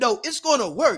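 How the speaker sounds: acted cocky, confident, settled certainty. Retelling a friend's answer about a PowerPoint: imitating Billy sounding confident.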